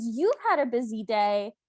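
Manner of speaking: imitated angry, mad voice. Retelling a scene where the stepmother answers: imitating a mad stepmother. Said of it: "the stepmother is so mad".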